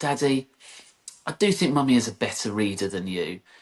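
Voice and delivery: ordinary talk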